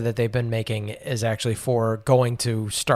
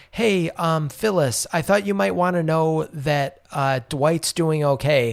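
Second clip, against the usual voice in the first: mock, pointed, high-pitched tone; 5 semitones higher than usual. Retelling a scene where Pam tells Phyllis news: imitating Pam speaking loudly. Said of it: "Pam really loudly is like".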